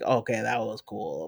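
sarcastic tone. Showing how people react to cheesy action scenes: sarcastic.

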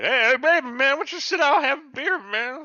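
put-on shrill, loud, drunk-and-stoned wasted voice. Retelling a scene where the characters are all drunk and high: imitating drunk, high characters. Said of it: "they're all drunk and high".

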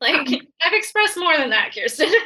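high, giggly talk, laughing through words. Replying to the other speaker in conversation, giggling while talking. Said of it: "sorry, I'm giggling".

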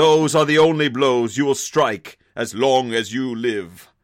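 lofty, noble-sounding delivery. Redoing a saga hero's retort after calling the first take wrong: more noble voice. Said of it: "He deserves a more noble voice there".

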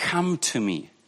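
unhurried, deliberate reading. Rereading words of Jesus to listeners, letting each phrase sink in, very slowly. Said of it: "read this again to you very slowly".

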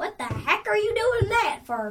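high, crow-like talking bird voice. A player linked to a crow's body speaks through it; crow accent. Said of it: "That was a good crow accent".

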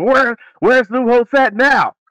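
mock irritated, mad, very high-pitched, angry voice. Retelling what was said at the end of the game: imitating someone mad. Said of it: "that's why Ryan Day was mad".

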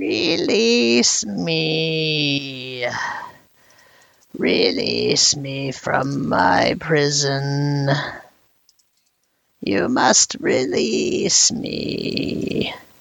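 yammering creature voice with drawn-out "me". Narrating a tabletop game, voicing a trapped creature to the players, yammering imprisoned creature. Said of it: "And you hear it say".

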